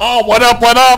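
put-on high, loud, belted drunk showoff hype.

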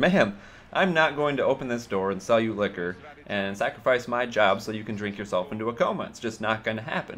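ordinary talk

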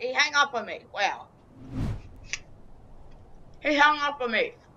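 crunchy chewing while speaking. Speaker on a call, reacting to being hung up on, while eating an apple. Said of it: "I'm just eating an apple".

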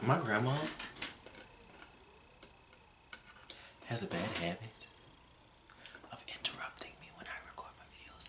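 hushed whisper. Recording a video, the speaker whispers so the grandma won't hear. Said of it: "I'm whispering because I don't want her to hear me".

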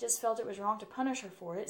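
ordinary talk

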